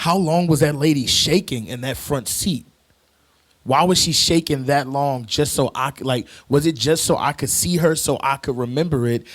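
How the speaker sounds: ordinary delivery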